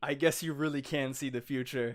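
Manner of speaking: ordinary talk, nothing marked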